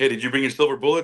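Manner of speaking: mock giggly, amused, laughing through the words. Retelling a joke about a werewolf call: retelling laughing while talking. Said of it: "we start laughing like".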